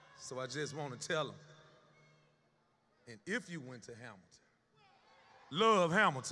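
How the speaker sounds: very loud voice, choked up, tight, swooping. Addressing former students who call out their name: choked up. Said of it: "I'm getting a little choked up".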